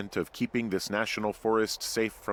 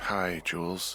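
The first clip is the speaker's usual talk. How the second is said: drowsy, tired, just-woken sleepy voice; 3 semitones lower than usual. Just woken up to answer the radio, greeting the caller, tired. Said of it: "you sound tired".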